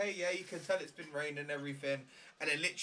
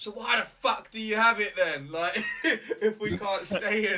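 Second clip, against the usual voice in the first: play-acted, very loud, pissed-off outburst, pitched up; 6 semitones higher, 9 dB louder than usual. Retelling what a bloke said when people were told to move, retelling an angry outburst. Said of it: "he was pissed".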